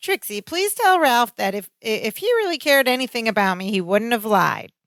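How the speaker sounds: mock smug, self-satisfied put-on voice. Retelling a TV scene where Alice answers through Trixie: imitating smug Alice. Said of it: "all smug".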